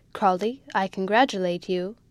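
plain reading voice

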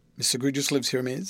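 plain

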